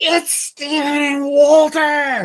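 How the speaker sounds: very high, very slow, drawn-out shriek. Retelling a voice screaming at them at a quilt show, imitating a scream. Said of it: "This voice screams".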